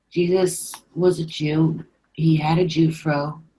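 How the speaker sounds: put-on completely deadpan, flat, slow, no inflection. Quoting MK's remark, in MK's completely deadpan voice. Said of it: "in his completely deadpan voice".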